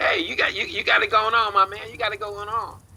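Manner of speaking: loose, laid-back street-cat voice, very high. Imitating the brother character B, a street-cat type, greeting someone: imitating B, a street cat. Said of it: "he's kinda like a street cat. He says".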